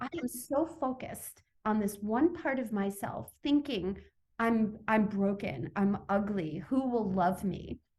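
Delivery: plain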